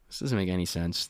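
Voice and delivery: plain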